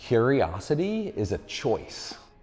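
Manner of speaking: drawn out word by word, very slow and deliberate. A speaker announces a key point to listeners, said slowly. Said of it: "I'm going to say this slowly".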